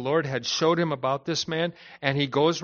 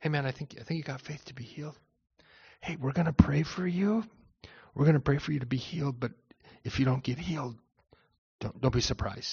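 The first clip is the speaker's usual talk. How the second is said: hushed, soft half-whisper, close to the ear; 6 dB quieter than usual. Acting out a timid apostle praying quietly for healing: mock half-whisper. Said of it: "he didn't go over and whisper in the guy's ear".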